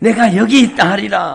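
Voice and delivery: loud, high proclaiming voice.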